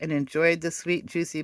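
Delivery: ordinary delivery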